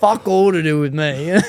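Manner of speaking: put-on fierce, aggressive voice. Retelling a podcast guest's quote about online haters: imitating Michael Lappin fierce and aggressive. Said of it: "he said it so fierce and aggressive".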